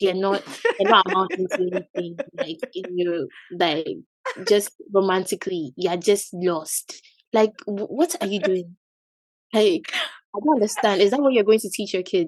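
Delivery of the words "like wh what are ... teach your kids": scolding, disapproving, lecturing auntie voice, African accent. Speaking to a listener who says she sounds like an African auntie. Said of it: "you sound like an African auntie".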